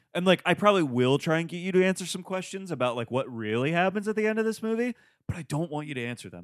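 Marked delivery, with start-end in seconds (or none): 5.3-6.5 whispered aside, quieter. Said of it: "I'm just whispering that into the microphone".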